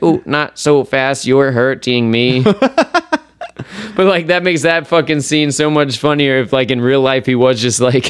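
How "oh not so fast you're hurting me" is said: mechanical, machine-like robot voice. Retelling a scene from a show, speaker voices the girl's line in a robot voice. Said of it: "the girl's robot voice".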